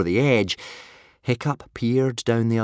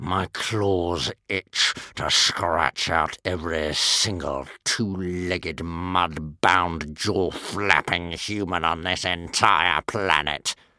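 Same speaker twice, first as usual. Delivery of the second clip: hissed, hateful, lower pitch; 4 semitones lower than usual. Reading a story: a dragon declares hatred of humans, hissing with hatred. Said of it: "he hissed".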